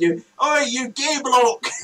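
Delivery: mock child voice, loud, high, drawn-out shout. Retelling what a young boy shouted from a window: imitating a kid shouting.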